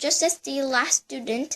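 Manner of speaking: ordinary delivery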